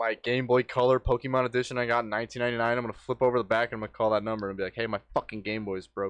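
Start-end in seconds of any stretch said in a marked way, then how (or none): 4.7-6.1 heated, hot-headed, fed-up griping tone. Acting out a made-up phone call to complain: pretend heated complaint. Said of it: "You're really heated about egg-themed fights".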